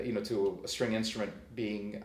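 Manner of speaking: ordinary talk, nothing marked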